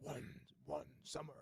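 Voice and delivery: movie trailer voice. Showing the kind of movie trailer line wanted: deep movie trailer voice. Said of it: "those really deep voice".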